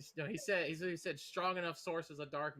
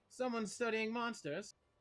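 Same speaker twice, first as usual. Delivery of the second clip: high, put-on shout in character; 7 semitones higher than usual. Voicing a character who shouts back to a question: shouting back in character. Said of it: "You just shout back".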